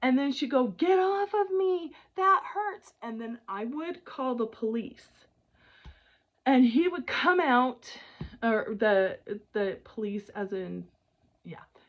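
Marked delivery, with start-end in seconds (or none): 0.7-2.9 loud, high-pitched, pained scream. Retelling what a neighbor woman yelled during fights: imitating a woman screaming. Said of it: "I would hear this woman screaming".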